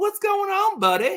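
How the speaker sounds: put-on very high, bright, happy Southern accent. Retelling how a caller answered the phone, with that Southern accent. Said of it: "with that Southern accent".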